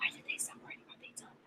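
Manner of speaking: soft, hushed, unvoiced whisper.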